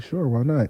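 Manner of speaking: soft, quiet, unsettling, creepy psychopath-style voice. Retelling how a friend answered the phone: imitating friend's quiet psychopath voice. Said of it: "he talks real quiet like he a psychopath".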